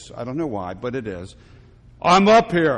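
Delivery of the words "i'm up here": loud, big booming voice. Telling a joke, a man hanging from a branch calls out and hears a reply: deep booming voice of God. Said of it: "it's always a deep, booming voice".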